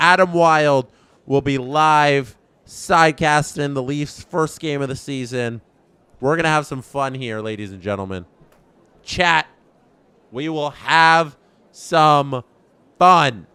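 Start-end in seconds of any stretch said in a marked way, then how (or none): 9.0-13.3 playfully stern, mock tone. Telling chat they will have fun: mock stern. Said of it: "I'm saying that very sternly".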